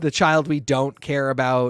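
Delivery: ordinary delivery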